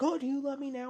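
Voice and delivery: very high, loud, shrill hysterical screech. Recounting a scene where a woman screams at a man, retelling hysterical screaming. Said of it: "she's like screaming at him like".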